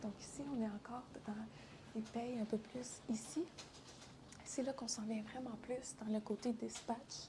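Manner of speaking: hushed near-whisper.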